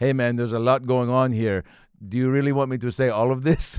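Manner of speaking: put-on thick German accent. Retelling a birthday video message bought for a buddy: Detlef Schrempf, thick German accent. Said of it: "I heard it in a thick German accent".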